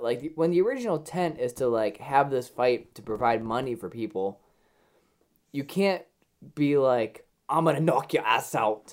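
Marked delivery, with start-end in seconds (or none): 7.5-8.9 clumsy, bad put-on Irish accent. Talking about a charity fight, the speaker does an Irish accent impression. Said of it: "that was my Irish impression".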